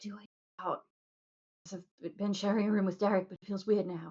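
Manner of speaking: hushed, quiet half-whisper. Leaning in to another character with a private question: half-whispering. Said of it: "I was whispering".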